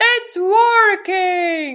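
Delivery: very loud, shrill, high-pitched shout. Reading a story, a character shouts as the plane speeds up: shouting. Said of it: "shouted Henry".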